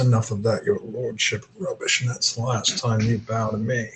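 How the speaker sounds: hushed, low undertone. Game master voicing a man leaning in so Grandmama can't hear, in a lowered voice. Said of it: "He leans forward and lowers his voice".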